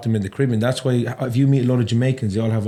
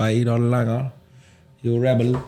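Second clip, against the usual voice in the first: put-on County Cork Irish accent. Describing how people in Cork and Kerry talk, in a Cork accent. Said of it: "they'll be talking like this".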